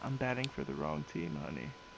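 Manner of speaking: half-whispered, very low and barely audible. A narrator voicing a man who leans in to the listener, half-whispering. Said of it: "he just whispers out".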